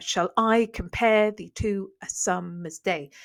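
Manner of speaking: slow, marked iambic beat, stress on every second beat.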